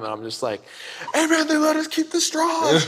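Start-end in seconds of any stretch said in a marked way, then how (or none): 1.1-2.7 put-on, very high, thrilled shout. Retelling yelling to a buddy in the car ahead, retelling a yell. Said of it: "I'm yelling at him".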